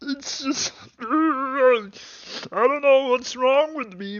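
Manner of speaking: very high, drawn-out voice. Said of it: "I'm like that Canadian psychologist Jordan Peterson".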